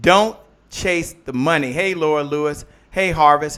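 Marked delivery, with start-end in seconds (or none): 0.0-1.7 measured, drawn-out, slowed-down, deliberate delivery. Repeating a saying to listeners so it sinks in, saying it slower. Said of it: "Let me say that again a little slower".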